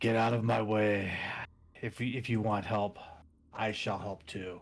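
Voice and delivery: low, deep, dark, rasping voice. Narrator voices the character Solaris emerging, in Solaris's dark raspy voice. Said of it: "the dark, deep, raspy voice of Solaris".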